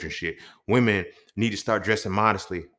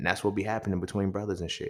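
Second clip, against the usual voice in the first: ordinary talk, nothing marked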